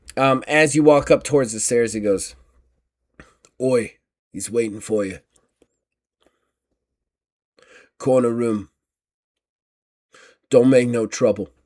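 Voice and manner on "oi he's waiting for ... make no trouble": tough, street-tough thug voice. A game master voices a thug greeting the players near the stairs, in a thug voice. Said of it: "is a thug".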